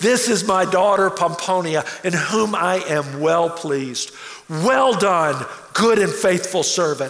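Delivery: loud, proclaiming, declaiming call-out. Retelling how he called out about pomponia, retelling a loud call-out. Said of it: "he called out in a loud voice".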